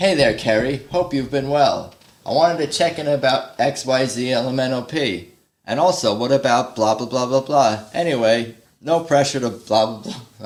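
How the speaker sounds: put-on formal, polite voice. Acting out a fake email to a viewer: put-on formal emailing voice. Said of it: "I'm writing a fake email to you".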